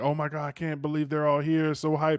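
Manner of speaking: hyped excited fan voice. Retelling what commenters said about the chapter: imitating excited fans.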